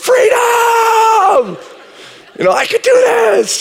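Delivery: high, shouted battle cry, rallying.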